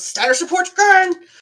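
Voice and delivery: very high-pitched shouting. Voicing the captain steering the boat away from them: yelling. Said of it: "and he just yells".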